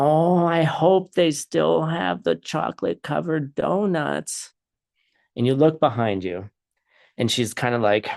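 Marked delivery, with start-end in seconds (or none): 0.0-4.5 put-on slow, high old woman voice. Storyteller describing a scene, voicing an old lady who comes in behind the listener. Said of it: "you hear the voice of this old lady".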